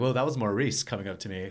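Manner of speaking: normal talking voice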